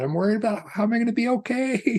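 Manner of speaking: play-acted talking through laughter, very high, giggling. Retelling what a woman wheeled before the class said, imitating someone laughing while talking. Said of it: "she's just laughing and laughing and laughing".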